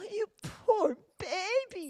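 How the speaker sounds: very high, exaggerated, over-the-top mock sympathy. Showing how to do it over the top: over-the-top mock sympathy. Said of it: "just do it over the top, you know, like I just did for you".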